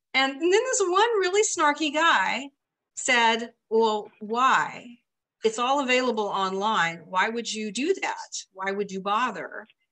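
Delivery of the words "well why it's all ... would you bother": normal talking voice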